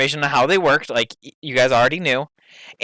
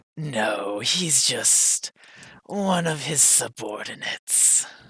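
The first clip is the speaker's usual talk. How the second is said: eerie, creepy-sounding delivery; 7 dB quieter than usual. Character asked about his master answers, in a creepy voice. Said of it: "you even sound like a creepy bastard".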